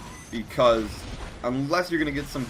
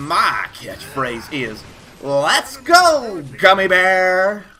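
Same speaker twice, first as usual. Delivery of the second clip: odd put-on voice, very loud and very slow; 6 semitones higher, 9 dB louder than usual. Reading out a catchphrase someone sent in, weird put-on voice. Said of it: "It's kind of a weird voice".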